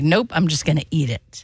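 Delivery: ordinary delivery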